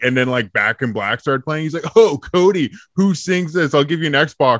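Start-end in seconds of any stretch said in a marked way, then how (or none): 2.0-4.6 needling, mocking dad voice, high and loud. Retelling how dad quizzed him about radio bands: imitating dad mocking. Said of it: "just mocking me".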